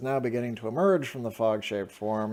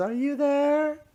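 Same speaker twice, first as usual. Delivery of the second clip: put-on little child-like voice, higher and louder; 4 dB louder than usual. Voicing a small creature in a horror scene: small childlike voice. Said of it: "a little voice that says".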